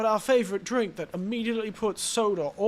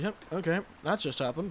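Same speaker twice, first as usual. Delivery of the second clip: mock casual tone, lower and quieter; 4 semitones lower, 6 dB quieter than usual. Imitating the game character reacting to a kill: imitating a casual character. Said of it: "She's so casual".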